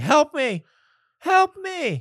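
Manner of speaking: very high, slow, drawn-out yelling cry. Retelling lying on the bathroom floor when someone got home, reenacting your own yelling. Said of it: "and I start like yelling".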